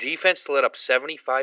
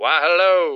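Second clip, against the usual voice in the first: slow, drawn-out, far-off mock southern drawl. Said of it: "You sounded very southern".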